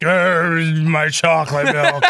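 zombie-like voice. Retelling how someone asked for chocolate milk, in a zombie voice. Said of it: "It's like the zombie that pours through the fucking wall".

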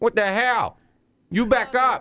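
upset, agitated, high-pitched outburst. Telling someone to back up after being threatened, upset. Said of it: "Sounds like he's upset".

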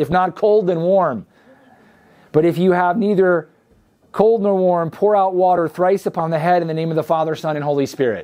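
normal talking voice

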